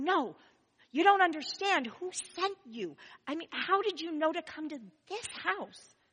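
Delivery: imitated whisper. Retelling the mother pressing the question again: imitating a whisper. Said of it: "she'd nudge me and whisper".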